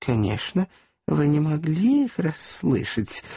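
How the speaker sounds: bashful, shy and sheepish. A woman answers a man who begged her to repeat her words; bashful. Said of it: "стыдливо сказала она".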